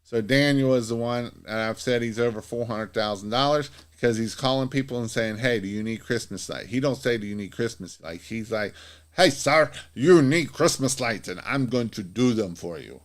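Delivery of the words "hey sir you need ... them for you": loud, clumsy put-on Scottish accent. Describing a man who calls people offering Christmas lights: Daniel's Scottish accent, done badly. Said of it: "In his Scottish accent, which I really suck at".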